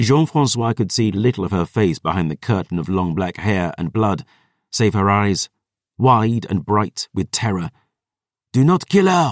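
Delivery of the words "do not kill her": bellowed, raised, high roaring voice. A man gives orders to soldiers around a cornered, terrified woman; roared. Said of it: "he roared".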